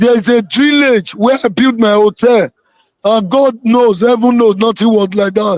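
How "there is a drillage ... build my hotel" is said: ordinary delivery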